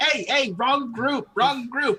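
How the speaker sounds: very high, squawky, squawking penguin-like bird voice. Retelling a penguin chasing one that joined the wrong group: squawking penguin voice.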